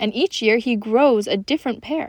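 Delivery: plain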